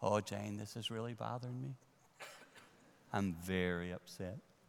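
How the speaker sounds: very quiet voice at half volume. Speaker demonstrating how they talk when something upsets them; half volume. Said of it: "I go to half volume".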